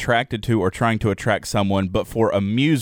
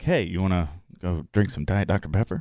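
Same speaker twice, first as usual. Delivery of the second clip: flirty, playful, flirtatious tone; 2 semitones lower, 4 dB quieter than usual. Showing how an offer to Jared would sound: flirtatious. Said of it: "You said it flirtatiously. Like I could look at Jared and be like".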